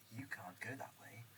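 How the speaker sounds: mildly patronizing, passively condescending voice. Speaker repeats the game voice line he recorded: passively condescending. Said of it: "the most like passively condescending voice I could do".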